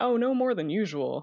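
light jokey laughing reply. Retelling her answer to a question asked as a patient, retelling a joking laugh. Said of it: "I laughed and I said".

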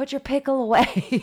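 mock screaming. Imagining what they would have screamed, acting out a scream. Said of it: "I would have started screaming".

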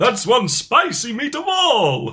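high, slow, loud delivery with gusto.

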